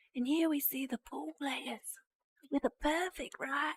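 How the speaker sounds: horrible fake Australian accent. Imitating an Aussie reaction narrator: horrible Australian accent. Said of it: "Pardon my horrible accent".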